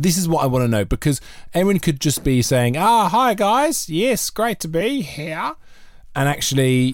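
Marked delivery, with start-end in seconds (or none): 2.7-5.5 put-on very high, slow, drawn-out Australian accent. Doubting where Erin really is, the speaker acts out Erin's greeting in an Aussie accent. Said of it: "That is a flawless Aussie accent".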